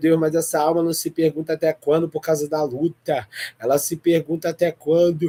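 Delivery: normal talking voice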